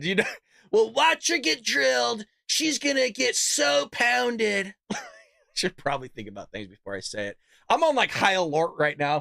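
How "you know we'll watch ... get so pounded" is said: slow, creaky, pitched-up drawl. Repeating his own remark in a Trump voice. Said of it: "in a Trump voice".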